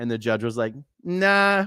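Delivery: ordinary talk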